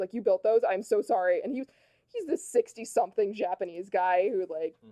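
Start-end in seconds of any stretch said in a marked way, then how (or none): 0.1-1.4 mock-distraught voice, louder. Retelling how a worker who knocked over a unicorn apologized: imitating a distraught apology. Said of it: "he was like distraught about it".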